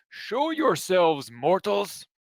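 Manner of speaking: thundering, loud, high-pitched bellow. A rock slowly stands up and addresses the sleepers, bellowing. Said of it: "hear him bellow".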